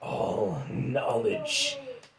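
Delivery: put-on demonic voice, sounding like a demon. A game narrator voices a demon speaking inside a character's head, in a demon voice. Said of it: "He's a demon".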